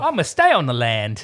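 put-on slow, drawn-out caricature country Australian accent. Joking about a young country Australian film character: Simpsons-version Australian accent. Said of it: "the Simpsons version of Australian accents".

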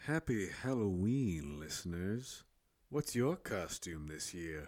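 put-on smooth jazz radio voice. A host greets listeners on Halloween in a costume voice, smooth jazz radio voice. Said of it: "Mine is a smooth jazz radio voice".

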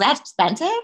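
mock obnoxious put-on voice. Retelling asking store staff questions: retelling own obnoxious questions. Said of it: "My voice wasn't like that when I was asking them".

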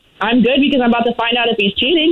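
aggressive, combative, fired-up, ready-to-fight tone. Answering a greeting on the phone before finding out about cheating: aggressive. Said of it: "you sound aggressive".

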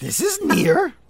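very high put-on puppet voice. Showing off a Sesame Street character impression with near and far: Grover voice. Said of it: "And I do a Grover".

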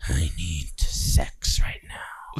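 put-on breathy, creepy old-man whisper. Describing creepy old men in a discussion, imitating a creepy old man. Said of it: "those creepy old men who are just like".

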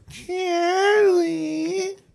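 put-on, very high, drawn-out, fond affectionate voice. Retelling how they called a friend's name: retelling own affectionate name call. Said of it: "I would call his name and be like".

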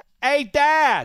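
put-on shrill, very loud, high Pittsburgh accent. Acting out a four-year-old walking up to his dad, in a Pittsburgh accent. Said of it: "how come you give me this pittsburgh accent".

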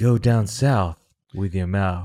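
low, slow advertisement narrator imitation.

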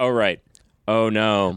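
put-on flat monotone voice. Mocking the game's voice actors, imitating flat monotone voice acting. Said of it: "They're so monotone".

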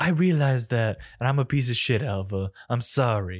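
imitated, mock pretentious tone. Retelling a boss's apology to an employee: imitating a pretentious tone. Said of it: "that little pretentious fucking tone in your voice".

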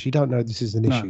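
hushed whisper. Whispering so his missus upstairs won't hear; whispering. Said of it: "I'm whispering because she's upstairs".

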